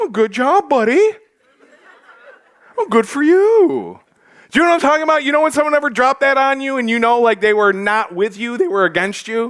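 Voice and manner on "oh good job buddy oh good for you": drawn-out, high, slow, condescending sarcasm. Reading James's words aloud with grade A sarcasm: sarcastic James. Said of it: "he's like".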